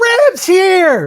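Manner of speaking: awkwardly over-loud, very high-pitched call. Voicing a woman in a told scene, awkwardly loud. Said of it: "she does it really awkwardly loud".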